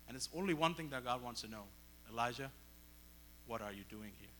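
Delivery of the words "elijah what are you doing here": very gentle, soft, mild tone. Retelling the story of Elijah, the speaker voices God's question, very gentle voice. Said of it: "Very gentle voice".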